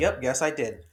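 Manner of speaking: ordinary talk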